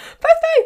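shrill, very high, very loud excited squeal. Signing off a podcast episode, getting really excited. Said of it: "Sorry, I'm getting really excited".

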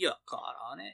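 put-on outback Australian accent. Joking about a seventies Australian TV show: Crocodile Dundee voice. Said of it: "Are you done now, Crocodile Dundee?".

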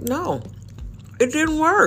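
high, exasperated retort.

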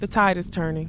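plain

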